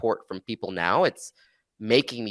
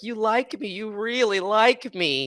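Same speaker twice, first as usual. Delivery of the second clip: very high-pitched, slow delivery; 13 semitones higher than usual. Quoting an actress's Academy Award acceptance speech: imitating Sally Field. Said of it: "Sally Fields' nineteen eighty-five Academy Award acceptance speech when she's like".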